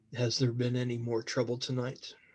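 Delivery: very deep, grand and hushed voice. Narrating a scene, voicing a man who keeps looking forward; very low, grandiose voice. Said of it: "you hear that very low, grandiose voice come from him".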